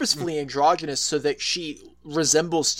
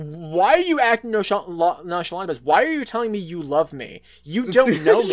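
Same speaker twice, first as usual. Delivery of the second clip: mock angry, accusing outburst, pissed-off; 3 semitones higher, 4 dB louder than usual. Retelling a comic scene where a character gets pissed: imitating an angry outburst. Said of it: "she gets pissed".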